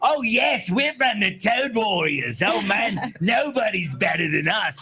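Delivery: high-pitched, slow, drawn-out character voice. Listing cartoon voices done, performing one: Rings voice. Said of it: "And his is".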